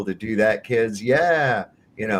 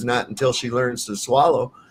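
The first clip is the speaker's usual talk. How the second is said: ordinary talk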